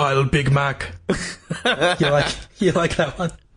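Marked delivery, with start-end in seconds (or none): 0.0-0.9 put-on robotic cyborg voice. Doing a bit about the Terminator working at McDonald's: Terminator impression. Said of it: "here's my impression of the Terminator working at McDonald's".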